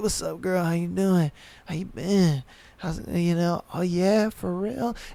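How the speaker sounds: smooth, sweet flirty tone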